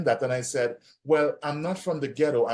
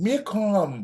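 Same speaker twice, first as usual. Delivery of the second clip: put-on raised-pitch Antiguan accent; 6 semitones higher than usual. Retelling a phrase that amazed the speaker's visiting brother, impression of someone's saying. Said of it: "give me your best impression of it".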